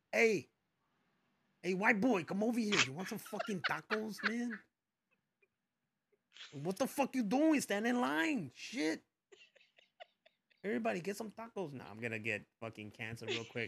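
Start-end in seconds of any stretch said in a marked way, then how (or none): 0.1-11.7 put-on intense tough street voice, pitched up. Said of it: "that's how I'm going to be to everybody".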